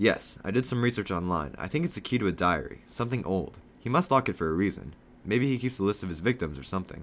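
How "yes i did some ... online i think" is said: ordinary delivery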